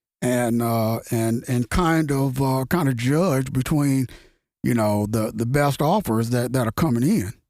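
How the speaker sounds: normal talking voice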